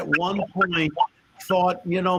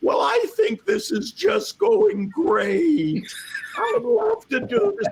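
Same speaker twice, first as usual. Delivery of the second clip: thin, very high squeaky voice, slow. Speaker retells what a man said on returning to the room, imitating a high squeaky voice. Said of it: "he had this high squeaky voice".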